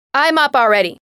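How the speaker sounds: very loud, furious angry shout. Woken by her mother's knocking for school, she answers; yelled back angrily. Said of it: "Justine yelled back".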